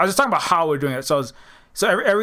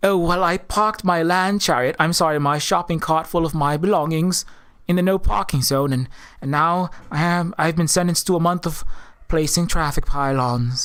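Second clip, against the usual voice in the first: put-on alien character voice. Acting out a homeless telepathic alien refugee pushing a cart: homeless Protoss refugee voice. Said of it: "He's like".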